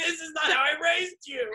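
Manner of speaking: acted-out, very high-pitched scolding yell. Retelling how their dad yelled at them for yelling at somebody: imitating dad yelling. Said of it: "he's like yelling at me".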